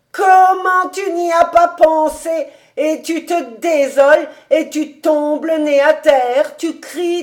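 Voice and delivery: drawn-out pitying cry. David exclaims at the crying, despairing lover, exclaiming. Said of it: "S'écria David en haussant les épaules avec une grimace bizarre".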